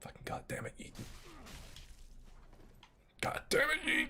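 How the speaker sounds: frustrated, angry, breathy whisper. Coaching another player through a move that keeps failing: getting angry. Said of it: "I'm getting angry".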